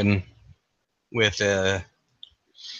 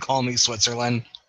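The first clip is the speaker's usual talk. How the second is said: ordinary delivery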